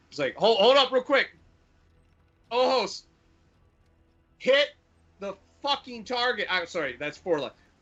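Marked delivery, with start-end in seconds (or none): 0.3-6.5 very high-pitched loud yelling. Voicing a character giving an order over the intercom: yelling over an intercom. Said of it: "yells across the intercom".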